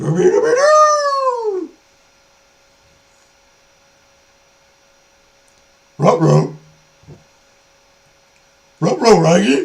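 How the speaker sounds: very high, drawn-out, swooping cartoon dog voice. Asked by the other speaker to do Scooby, performing a Scooby-Doo voice. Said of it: "Can you do Scooby?".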